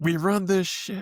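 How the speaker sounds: mock very high, drawn-out, overcome emotional cry. Retelling a player's post-game interview line: imitating an emotional outburst. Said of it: "he got all emotional".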